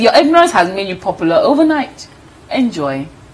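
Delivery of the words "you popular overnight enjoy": ordinary talk, nothing marked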